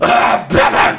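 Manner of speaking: loud, cheesy put-on superhero-style voice. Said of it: "such a horrible, cheesy voice for your Batman".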